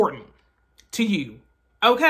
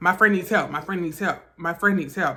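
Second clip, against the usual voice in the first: normal talking voice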